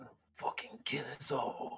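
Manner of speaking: soft, breathy, hushed half whisper. Voicing a downed soldier as he is eased to the ground: whispered a little. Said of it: "kinda whispered a little bit".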